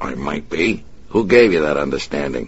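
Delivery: ordinary delivery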